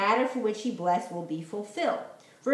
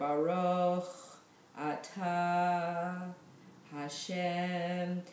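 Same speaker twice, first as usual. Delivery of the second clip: very slow, soft, each word set apart; 6 dB quieter than usual. Explaining how to say a bracha with focus, saying each word very slowly. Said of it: "I try to say it really slow".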